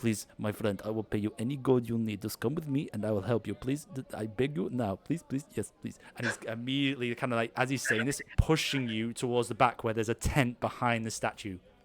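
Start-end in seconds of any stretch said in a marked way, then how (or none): 0.0-6.0 hushed half-whisper, very close to the ear. A game narrator voices a character half-whispering in the player's ear: half-whispering. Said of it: "he whispers in your ear".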